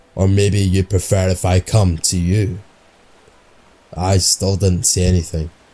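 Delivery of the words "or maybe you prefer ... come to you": low, gravelly, raspy witch voice. Reading a sleep-talker's eerie words aloud: low gravelly witch-like voice. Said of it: "the same low and gravelly voice".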